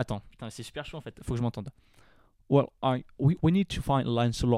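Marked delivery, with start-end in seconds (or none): 2.5-4.6 put-on British accent. Asked to repeat a line, doing it in the actor's voice: Michael Caine voice. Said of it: "avec peut-être la voix de Michael Caine".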